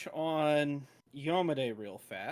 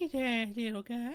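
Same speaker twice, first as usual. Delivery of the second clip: put-on creepy cartoon voice; 8 semitones higher than usual. Voicing a merchant in a tabletop game: Family Guy character voice. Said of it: "use what's his face's voice from Family Guy".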